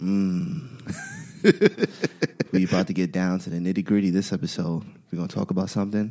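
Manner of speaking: sultry put-on voice. Podcast host opens the episode: soft, sexy voice. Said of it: "I'm trying to do my soft, sexy voice".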